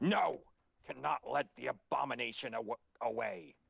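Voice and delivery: hissed out rough and creaky. Storyteller voices Engineer calling down from a tree, Engineer's hissing voice. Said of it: "And Engineer hisses".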